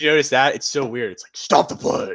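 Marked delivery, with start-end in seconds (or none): 1.3-2.2 super deep, dropped voice. Fans imitating the man who calls to stop the play: super deep Batman-like voice. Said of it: "his voice gets like super deep".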